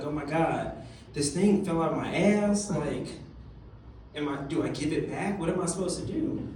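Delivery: ordinary delivery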